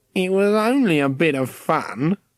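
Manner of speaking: slow, sly, whining, weaselly voice. Reading a story aloud, the trapped caretaker excusing himself: weaselly voice. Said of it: "he said in a weaselly voice".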